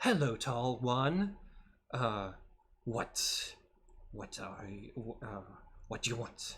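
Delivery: halting scorpion creature voice. Voicing a scorpion that greets a druid: voicing a scorpion. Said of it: "the scorpion notices you and, and, uh, says".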